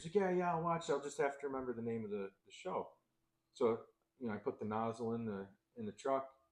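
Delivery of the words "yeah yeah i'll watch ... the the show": put-on all-excited, eager kid voice. Retelling a kid promising to watch the show: imitating an excited kid. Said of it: "so he was all excited".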